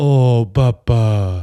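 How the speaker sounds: put-on baby-talk voice. Asked for a sample, showing baby talk to a dog: baby voice. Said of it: "Give me a little samp".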